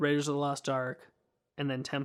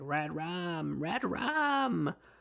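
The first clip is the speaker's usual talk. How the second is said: put-on very slow, drawn-out small child's voice; 2 semitones higher than usual. Describing a movie, the speaker does the little boy's voice from The Shining. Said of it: "My wife is much better at making that voice than me".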